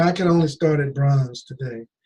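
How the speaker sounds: play-acted glum, downhearted, depressed, deflated tone. Retelling a customer's reply about starting at bronze: imitating a depressed tone. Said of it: "in a depressed state".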